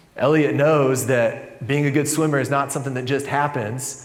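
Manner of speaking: plain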